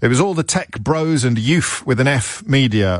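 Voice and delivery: ordinary talk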